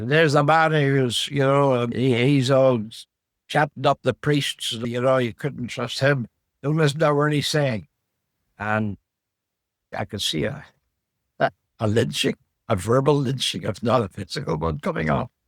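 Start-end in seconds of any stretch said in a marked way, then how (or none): 0.0-7.9 furious, angry shouted heckling. Retelling an angry woman in a crowd shouting: imitating a woman shouting. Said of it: "And she shouted".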